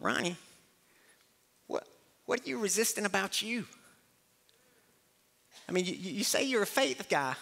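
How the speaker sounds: thin, squeaky, high-pitched voice. Recalling his mentor questioning him, the speaker does the mentor's squeaky voice. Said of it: "It's my mentor speaking in his squeaky voice".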